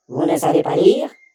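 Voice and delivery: furious, angry outcry. Voicing an angry bee scolding a wasp on her rose: furious exclamation. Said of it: "s'écria l'abeille furieuse".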